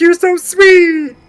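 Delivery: shrill, high, loud diva-style coo. Introduced as attempting her best impression, a speaker does a Miss Piggy impersonation. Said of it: "her best Miss Piggy impersonation".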